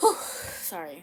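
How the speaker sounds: getting emotional, catching breath, slow loud exhale.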